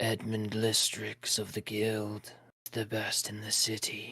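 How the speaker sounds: barely there, hushed half-whisper. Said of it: "in a whispery tone, he goes".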